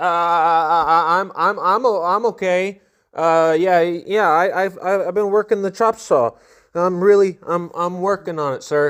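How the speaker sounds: acted-out nervous, panicked stammering. Retelling greeting a superior while sure of being fired, imitating nervous stuttering. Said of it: "stuttering over myself, freaking out".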